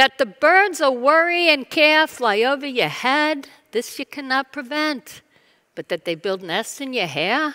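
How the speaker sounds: motherly voice with New York Italian accent. Sharing an ancient Chinese saying, in a New York Italian mom voice. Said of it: "it needs to be said in a New York Italian mom voice".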